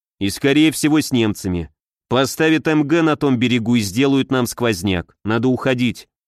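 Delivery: ordinary delivery, nothing marked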